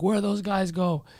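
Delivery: put-on tipsy, wandering, high drunken delivery. Retelling what a drunk woman asked outside: imitating a drunk woman. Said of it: "And she's drunk".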